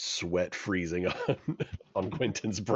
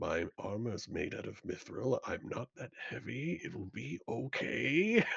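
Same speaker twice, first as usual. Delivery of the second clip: hushed half-whisper under the breath; 3 semitones higher, 6 dB quieter than usual. A character crossing the ice talks to themselves, half-whispering to self. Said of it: "I'm just whispering to myself".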